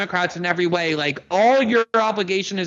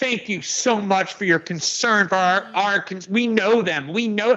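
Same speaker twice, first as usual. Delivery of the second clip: mock, overdone, heavily sarcastic politeness. Retelling a woman's reply to a man questioning her, acting out sarcasm. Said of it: "she got really sarcastic and she's like".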